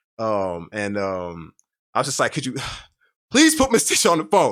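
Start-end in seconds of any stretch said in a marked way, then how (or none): 2.3-4.5 high, raised, desperate pleading tone. Retelling asking a little sister on the phone for miss tisha, a desperate plea. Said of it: "I remember I got real desperate".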